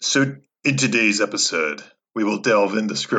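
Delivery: epic movie trailer announcer voice. A guest who Zoom-bombed a podcast introduces today's episode in movie trailer voice. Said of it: "I'm doing trailer voice guy again".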